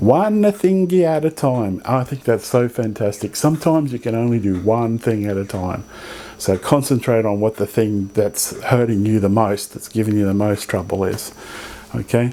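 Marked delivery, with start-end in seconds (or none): 0.0-1.8 put-on Italian accent, slow and high-pitched. Giving advice, the speaker quotes their mum's saying, imitating mum's italian accent. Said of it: "Like my mum says with her Italian accent".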